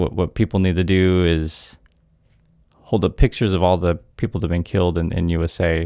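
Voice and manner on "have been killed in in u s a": ordinary talk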